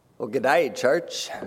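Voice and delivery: cheesy, over-the-top put-on Australian accent. Opening a church announcement for the Zoomerang program, cheesy Australian accent. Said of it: "cheesy Australian accents".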